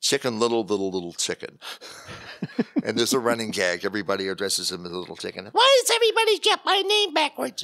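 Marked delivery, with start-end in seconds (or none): 5.5-7.6 pitched way up and loudly projected. Describing a film's running gag about a character's name: Chicken Little voice. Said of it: "I never expected you to be doing voices".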